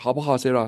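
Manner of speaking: plain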